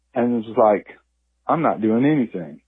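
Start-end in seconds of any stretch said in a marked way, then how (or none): 1.5-2.5 casual, couldn't-care-less, unbothered bear voice. Voicing a bear caught in the trash: nonchalant bear voice. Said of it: "looked over at me very nonchalantly".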